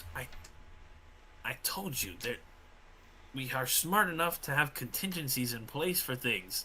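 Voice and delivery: whispered, hushed, breathy mutter under the breath. Narrator voices a hobbling companion stumbling along beside you: muttering. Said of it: "he mutters".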